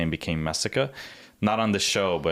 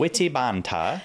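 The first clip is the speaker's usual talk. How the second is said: bad put-on Australian accent, much higher; 6 semitones higher than usual. Repeating a phrase from the conversation, in a horrible Australian accent. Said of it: "that was a horrible Australian accent".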